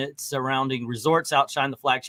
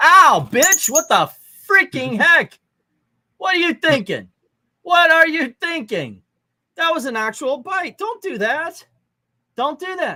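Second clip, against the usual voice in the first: very high-pitched, shrill, loud yelling; 14 semitones higher, 5 dB louder than usual. Speaker just bitten by the little boy, yelling at him. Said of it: "why I'm yelling".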